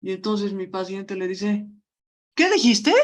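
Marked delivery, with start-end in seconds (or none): 2.3-2.9 snapped back high and loud, furious. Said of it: "su rabia hubieran visto".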